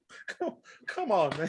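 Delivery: held-back laughter. Retelling watching a movie scene, imitating holding back laughter. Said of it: "I'm trying to hold back the laughter".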